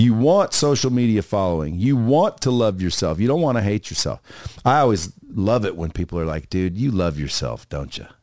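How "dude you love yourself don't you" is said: acted-out disapproving, accusing, judgy tone. Retelling what people say to them: imitating a disapproving tone. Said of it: "they say it like it's negative".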